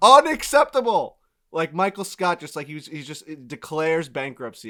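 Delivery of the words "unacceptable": very high shrieking scream at top of lungs. Retelling reaction to an email about a delivery delay, retelling own screaming. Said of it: "I'm screaming at the top".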